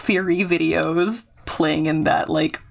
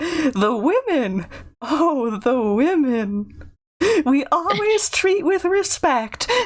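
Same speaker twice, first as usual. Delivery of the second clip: high, slow, tiny cartoon lemur voice; 9 semitones higher than usual. Quoting a line from a cartoon about women: Mort voice. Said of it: "There's one line where he's like".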